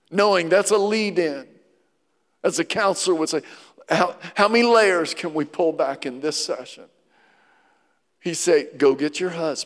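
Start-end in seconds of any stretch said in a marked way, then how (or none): 8.7-9.6 acted, gentle, fatherly tone. Speaker retelling what he told the woman, acting out gentle fatherly words. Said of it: "so gently, like a father, he goes".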